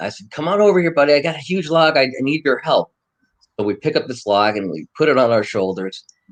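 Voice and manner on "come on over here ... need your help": high, hollering, calling-out yell. Retelling calling a companion over to a dry log: retelling a yell. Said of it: "So I yelled to Tommy".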